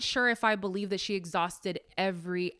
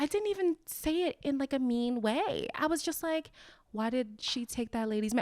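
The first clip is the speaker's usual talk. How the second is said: put-on timid voice, higher in pitch and quieter; 5 semitones higher, 4 dB quieter than usual. Retelling what Kelly said about Portia, imitating Kelly's sheepish tone. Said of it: "talking like she's ha- she has her uh, tail between her legs".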